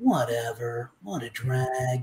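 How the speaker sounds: very low, very quiet, laid-back, unbothered surfer dude voice. Describing his early take on Shikamaru, doing it in a surfer-dude voice. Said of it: "my take on it in my head was more like Surfer Dude".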